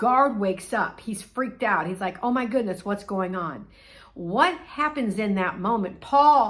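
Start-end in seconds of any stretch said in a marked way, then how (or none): none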